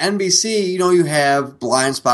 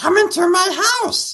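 put-on creature voice, much higher. Joking that the whispered segment name sounded creepy, the speaker does a Gollum voice. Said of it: "It's like Gollum saying".

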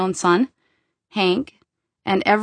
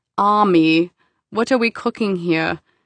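put-on Austrian-accented English. Doing the voice of a former chef mentor: Mario voice, Austrian accent. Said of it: "I often do a Mario voice, and it's".

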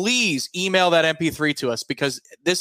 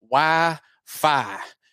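put-on 'wi-fi' drawled in a Southern accent. Listing one thing that is needed, with a Southern drawl on 'Wi-Fi'. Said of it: "I'll say it with a southern drawl".

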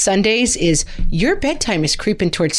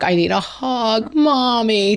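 put-on very slow, babyish baby-talk voice; 4 semitones higher than usual. A mother imitates her 8-year-old daughter; imitating child's baby talk. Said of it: "It's become her kind of like baby talk".

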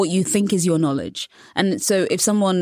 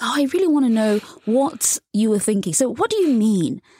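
fake interested, higher pitch; 4 semitones higher than usual. Showing how someone asks a question while only pretending interest, fake interested. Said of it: "you look fake interested".

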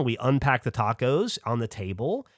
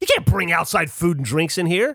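put-on aggressively angry outburst voice, pitched higher; 4 semitones higher, 4 dB louder than usual. Retelling what a security guard said at the entrance: imitating an aggressively angry guard. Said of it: "aggressively angry at us".

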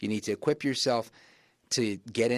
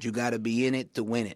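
put-on thick, heavy Puerto Rican accent, slower pace. Quoting what their late father always told them, in a thick Puerto Rican accent. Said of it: "in his thick Puerto Rican accent".

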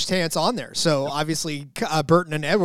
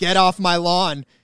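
fake crotchety old-man yell, slower; 3 dB louder than usual. Joking about retiring at 34, playing a crotchety old man yelling off his porch. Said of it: "I'd be a crotchety old man by now yelling off my porch".

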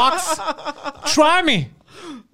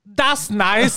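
ordinary talk

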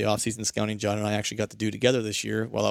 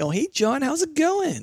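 sudden, very high, swooping voice; 3 dB louder than usual. Showing how a voice changes when greeting someone disliked, sudden high-pitched voice. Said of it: "gets all high all of a sudden".

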